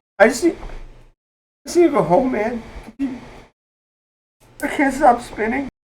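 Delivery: very high, slow, tearful, halting sobbing speech. Voicing a dizzy character who begs to be taken home: crying while talking. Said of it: "And he just starts crying".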